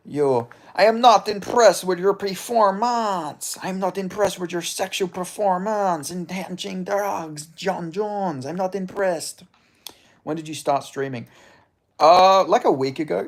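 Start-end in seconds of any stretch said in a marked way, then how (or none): 0.7-9.4 put-on French Canadian accent, pitched up. Doing an impression of GSP: GSP impression. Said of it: "I can sorta do a good G S P".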